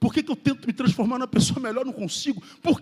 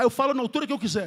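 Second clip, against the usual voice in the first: usual speaking voice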